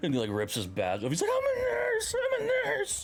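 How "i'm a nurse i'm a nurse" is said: very high, drawn-out, acted-out distraught meltdown. Retelling a show scene where a nurse rips his badge off: imitating someone freaking out. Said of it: "freaking out the whole time".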